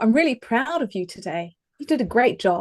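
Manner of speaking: heartfelt, genuine warmth. Showing how the same compliment sounds when the voice matches the words. Warm sincere praise. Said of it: "incongruent with the words".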